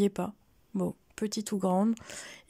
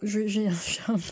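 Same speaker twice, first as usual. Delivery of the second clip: choking, voice catching mid-sentence. Thanking listeners at the end of a talk, the speaker chokes mid-sentence. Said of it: "je m'étouffe moi-même".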